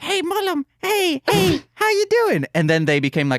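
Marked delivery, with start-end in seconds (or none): 0.0-2.5 tiny, squeaky, very high little voice. Voicing tiny sperm greeting Mullum before their voices got lower: high-pitched sperm voice. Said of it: "their voices got lower".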